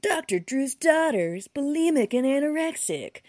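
high, loud news broadcaster voice. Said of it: "news broadcaster voice".

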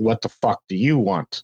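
ordinary talk, nothing marked

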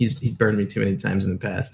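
ordinary talk

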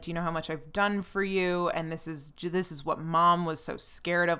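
ordinary delivery

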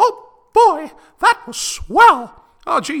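shrill, very loud, drawn-out, swooping sing-song cartoon voice. Closing the episode, joking as a cartoon character: Mickey Mouse voice. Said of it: "very clearly the real and actual Mickey Mouse and not an amateur impression".

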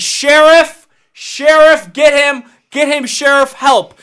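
very loud, drawn-out scream. Acting out a dad calling to the sheriff as a gorilla drags his daughter: yelling for help. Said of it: "you're yelling".

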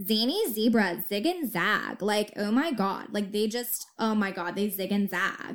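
put-on dumb, airhead Valley Girl voice. Showing a favorite tongue-twister exercise: stupid valley girl voice. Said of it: "a really stupid Valley Girl".

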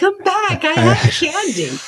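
yelling, high and swooping. Recounting Halloween, speaker re-enacts yelling after trick-or-treaters walking away. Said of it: "I'm yelling".

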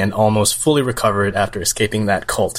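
ordinary delivery

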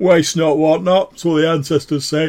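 very loud, belligerent, booming voice, pitched high. Narrator voices an unseen speaker as the listeners' senses return; loud bellicose voice. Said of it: "this loud, like bellicose voice going".

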